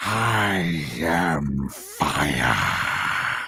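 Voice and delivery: dragon voice, dropped very low. Showing another considered villain voice for El Hermano: Smaug voice. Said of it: "Smaug from, um, the Hobbit trilogy".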